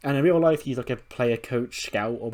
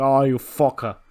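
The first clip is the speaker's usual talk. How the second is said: put-on Irish accent, crying out in pain; 2 semitones higher, 8 dB louder than usual. Retelling how Drew reacted while grabbing his knee, voice him in an Irish accent. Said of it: "That was Irish".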